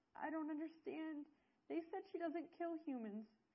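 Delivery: high, loud, frightened wail, shaking voice. A character watches a dragon kill someone, wailing and shaking with fear. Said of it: "Fairchild wailed and shook with fear".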